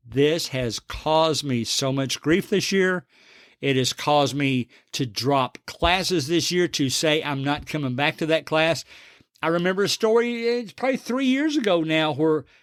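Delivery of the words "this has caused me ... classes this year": normal talking voice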